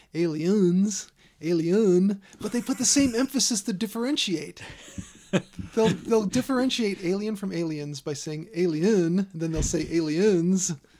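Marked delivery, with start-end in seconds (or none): 0.2-2.2 loud put-on Cajun accent. Mocking how other podcasts pronounce things, in a Cajun chef accent. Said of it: "they always say it like some Cajun chef".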